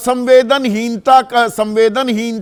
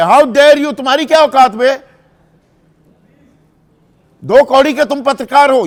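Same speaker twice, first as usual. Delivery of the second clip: play-acted haughty, arrogant, scornful, contemptuous tone; 2 semitones higher than usual. Acting out someone's answer to a journalist who dared to ask a question, in a mock how-dare-you tone. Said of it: "लहजा ये है ना, अंदाज ये है".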